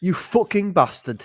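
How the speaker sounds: attempted regional British accent. Being coached by the other speaker, he tries a british regional accent. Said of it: "You're getting there".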